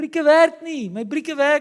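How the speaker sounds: very high, shrill, loud yelling shout. Recalling riding a bike down a hill toward their dad, retelling a yell. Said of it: "I start yelling".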